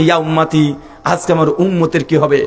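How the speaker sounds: usual speaking voice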